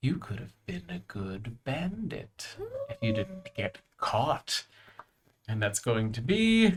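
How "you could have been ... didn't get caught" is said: barely audible, very quiet half-whisper. Speaking for a figure who approaches unheard and half-whispers in someone's ear: half-whispering. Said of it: "And he whispers".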